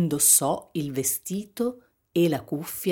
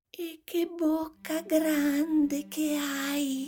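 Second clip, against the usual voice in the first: faint whisper, higher pitch; 11 semitones higher than usual. The little girl speaks to the wolf in the bed, faint whisper. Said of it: "bisbigliò la bambina con voce flebile".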